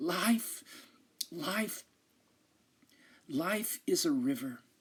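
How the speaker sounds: strained, rattling, effortful dying voice. A dying rabbi, asked the meaning of life, answers: speaking with great effort. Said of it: "drawing a rattling breath, and with great effort says".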